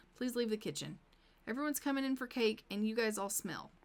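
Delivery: ordinary talk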